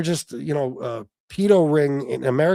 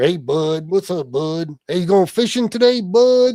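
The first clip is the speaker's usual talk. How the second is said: mocking, put-on hillbilly local's voice; 4 semitones higher, 3 dB louder than usual. A New Yorker in Pennsylvania mocks the talk he hears around here, in a mocking hillbilly voice. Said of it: "that's the kind of hillbilly shit you hear around here".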